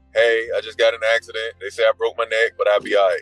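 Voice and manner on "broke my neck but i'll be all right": ordinary talk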